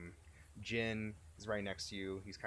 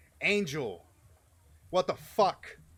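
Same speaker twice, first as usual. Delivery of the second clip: shrill, enraged, furious yell, very high and loud; 9 semitones higher, 15 dB louder than usual. A game master voices a man charging at Angel, yelling angrily. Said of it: "and he's yelling".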